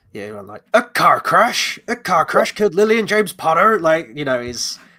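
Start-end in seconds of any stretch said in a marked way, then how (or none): 0.7-3.8 loud, big, booming, commanding voice. Imitating how the old film character reacts: Hagrid's booming voice. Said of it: "Big booming, commanding voice".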